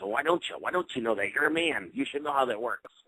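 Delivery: put-on cranky, crotchety old man voice. Speaker retells what a voice says, in a crotchety old man voice. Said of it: "It's like this old man crotchety voice".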